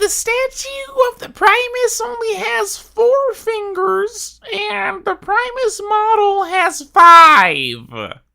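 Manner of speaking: very high, sing-song, swooping voice. Speaker voices what the commenters complain about, in a Wowhead commenter voice. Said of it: "Here's my best Wowhead commenter voice".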